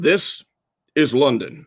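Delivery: wartime live radio broadcast announcer voice. Recalling how the wartime London radio broadcasts would start off, do your best Edward R. Murrow impression. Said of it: "That's my best Edward R".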